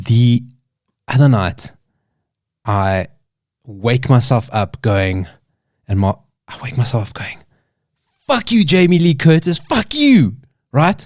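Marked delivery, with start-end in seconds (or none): 8.3-10.4 mock, high, screamed yelling outburst. Retelling waking up screaming at someone in a dream: imitating own screaming. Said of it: "woke myself up screaming that".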